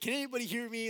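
frantic, high, loud panicked yell. Retelling how he tried to reach someone over the headset: imitating someone screaming. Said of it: "he's just like trying to scream into the headset".

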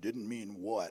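put-on very deep, low voice with Buffalo accent. Retelling how a voice cut in on Don, in a deep voice with Buffalo accent. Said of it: "this deep voice with a Buffalo accent said".

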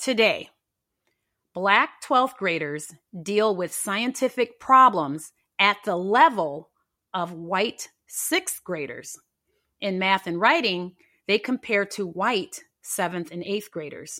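slow, deliberate, measured, unhurried spacing. Repeating a statement to listeners, saying it slow: slow delivery. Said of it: "I'm going to say it slow".

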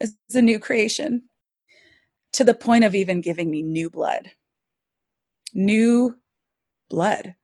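voice choked up, close to breaking into crying. Sharing a personal faith story with listeners, on the verge of crying. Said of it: "I'm going to cry".

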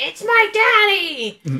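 shrill, very high swooping wail, "daddy" stretched. Recapping a bank robbery scene: imitating a girl screaming. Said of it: "She again screams".

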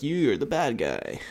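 movie-star voice in movie trailer style. Retelling a movie trailer line: Michael Keaton impression. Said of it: "That's my Michael Keaton impression".

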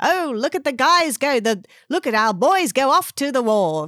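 put-on old-time 1940s wartime radio newsreel announcer voice. Talking about a newsletter, doing the voice: 1940s war announcer voice. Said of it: "like 1940s, ... Second World War kind of announcer voice".

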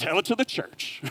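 slightly sassy, pointed delivery with a little attitude. Reading verse 17 aloud, with a little bit of attitude. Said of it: "I always read that with a little bit of attitude".

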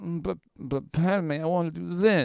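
very high, slow, drawn-out whine. Mocking how Anakin Skywalker acts in the movie: whiny Anakin Skywalker voice. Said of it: "Everything he does is like".

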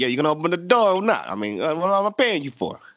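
put-on fake Italian accent. Retelling what a man in the episode said, put-on Italian accent. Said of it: "I just gave him an Italian accent".

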